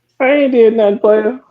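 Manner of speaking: voice shooting very high, squeaky. Protesting that he did nothing, his voice going high. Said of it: "you see how the voice got high?".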